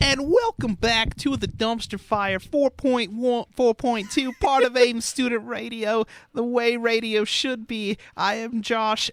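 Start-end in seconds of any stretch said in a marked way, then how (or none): 0.0-8.0 put-on emo voice, higher pitch. Welcoming listeners back to the radio show: mimicking an emo voice. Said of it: "you were mimicking my very good and not bad emo voice impression".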